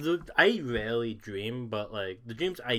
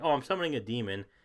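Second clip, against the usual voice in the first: breezy, super casual, offhand, matter-of-fact tone. Retelling a best friend's reply in a dream: imitating a super casual tone. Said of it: "super casually, like it's normal".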